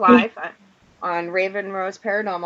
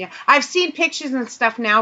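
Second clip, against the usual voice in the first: normal talking voice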